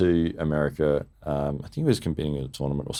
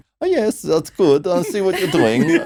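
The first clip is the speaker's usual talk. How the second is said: put-on high, friendly voice with a Russian accent; 13 semitones higher, 7 dB louder than usual. Retelling what the arm wrestler said during the match: imitating high friendly Russian-accented voice. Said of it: "a high, friendly kind of voice with that Russian kind of accent".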